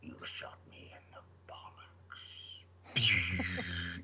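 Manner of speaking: slow, whispered character voice. Imagining a line redone in a villain's voice: Darth Maul voice. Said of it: "He should have done that in the Darth Maul voice".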